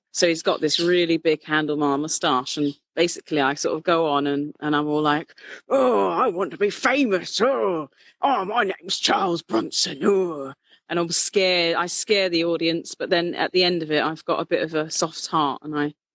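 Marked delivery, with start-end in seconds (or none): 5.7-10.6 slow, scary, drawn-out stage character voice. Doing a stage persona for another speaker: Charles Bronson impression. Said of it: "give you impersonations of all of them".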